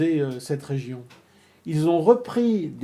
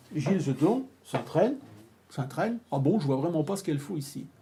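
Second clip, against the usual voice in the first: usual speaking voice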